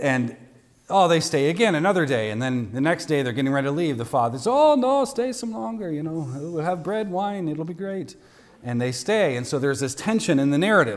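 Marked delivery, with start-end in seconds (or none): 4.5-8.1 terrible fake Italian accent, pitched up. Retelling a story, voicing the father, in a terrible Italian accent. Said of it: "terrible accent".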